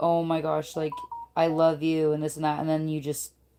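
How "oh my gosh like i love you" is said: mock begging, pleading tone. Retelling how someone begged the speaker to move: imitating someone begging.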